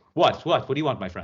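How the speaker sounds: brusque, rude, snappy delivery full of attitude. Retelling how the called-back guy answered a complaint: imitating someone with attitude. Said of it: "immediately comes in with a lot of attitude".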